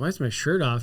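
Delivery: ordinary talk, nothing marked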